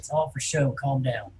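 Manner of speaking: whispering in character voice. Voicing a character who whispers back during a tabletop game: whispering in character. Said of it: "I'll whisper back to him".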